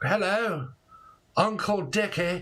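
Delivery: put-on posh accent. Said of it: "someone that's very posh here now".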